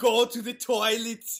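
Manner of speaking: slow, booming, loud yell. Pitching an imagined movie scene, Arnold mock-yelling at a baby. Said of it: "Arnold just yelling at the baby".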